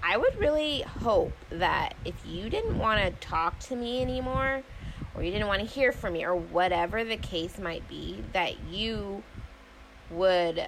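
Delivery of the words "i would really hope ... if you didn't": plain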